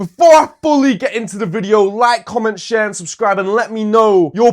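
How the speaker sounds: loud, fired-up, excited shouting. Youtuber opening a video before a deciding match, shouting excitedly. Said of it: "I'm shouting because I'm very excited".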